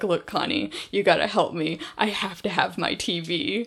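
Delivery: ordinary talk, nothing marked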